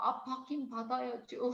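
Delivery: mock tiny, timid voice. Retelling their own past reply to someone's question, imitating a tiny, shrinking voice. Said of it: "너무 기어 들어가는 목소리로".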